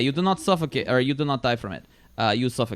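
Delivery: imitated Russian accent. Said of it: "She's throwing out the accents again".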